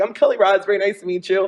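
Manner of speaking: high-pitched, bubbly, giddy voice. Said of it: "Very, like, bubbly and giddy".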